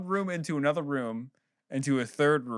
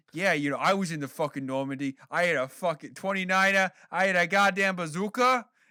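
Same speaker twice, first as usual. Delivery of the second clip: put-on Massachusetts man voice, higher; 4 semitones higher than usual. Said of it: "Massachusetts man yells at you".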